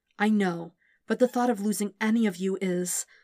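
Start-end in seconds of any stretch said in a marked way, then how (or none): none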